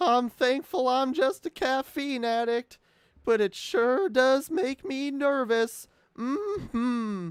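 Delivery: very high, loud, slow, drawn-out voice. Reading a chat message aloud: Mister Poopy Butthole voice. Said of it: "a Mister Poopy Butthole voice".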